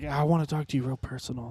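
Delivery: mock creepy whispering. Retelling a vendor's words to the speaker and a teammate, imitating a creepy whisper. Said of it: "he whisper like that?".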